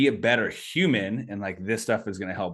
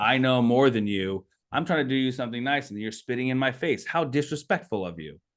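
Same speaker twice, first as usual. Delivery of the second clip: put-on condescending tone, pitched higher; 5 semitones higher than usual. Retelling a sales call, imitating the salesman: imitating a condescending salesman. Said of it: "it was very condescending".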